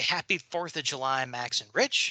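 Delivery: ordinary delivery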